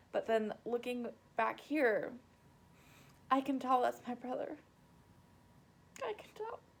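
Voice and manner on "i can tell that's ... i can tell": speaking through tears in a teary voice. Recognizing their brother, who died in a car crash, crying. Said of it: "the reason I'm crying".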